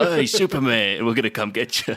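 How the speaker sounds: put-on loud, thick, heavy New York accent. Describing how the henchmen talk to Superman, thick New York accent. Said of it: "they just have this thick New York like".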